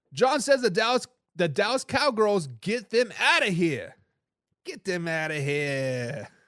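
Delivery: put-on Boston accent, drawn-out. Host reading a viewer's comment aloud, in a best-attempt Boston accent. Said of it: "best Boston accent I can get".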